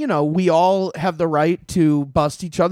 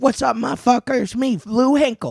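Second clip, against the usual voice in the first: put-on pitched-up Philadelphia man's voice and accent; 6 semitones higher than usual. Describing a friend from Philly by imitating him: imitating Lou Hinkle. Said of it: "Philly Lou. He's like".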